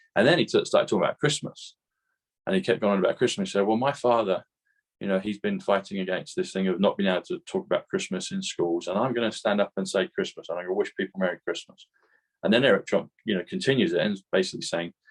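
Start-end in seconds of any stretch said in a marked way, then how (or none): none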